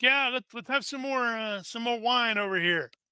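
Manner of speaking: put-on cheerful, a bit drunk. Voicing a player's uncle waving the group over for more wine, jovial and slightly tipsy. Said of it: "he sort of waves like".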